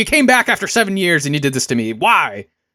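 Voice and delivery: cranky, mad-at-you, fed-up angry tone. Retelling how the windmill guy reacts in a game: imitating an angry windmill guy. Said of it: "he's always mad".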